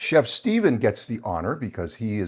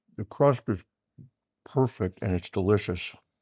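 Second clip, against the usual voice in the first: talking with a full mouth, chewing. Tasting the dish with a companion, talking with a full mouth. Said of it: "I'm saying this with a full mouth".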